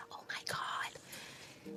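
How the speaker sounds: imitated whisper. Retelling hearing big news on the phone: imitating own past whisper. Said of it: "And I started whispering".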